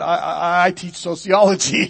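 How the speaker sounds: mock stammer. Retelling how a woman answered Mrs. Campola's question, imitating a stammer. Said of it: "kind of stammered and said".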